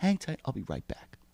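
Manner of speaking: quiet, calm tone. Retelling a traffic stop, imitating the trooper's calm voice. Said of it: "Like that voice".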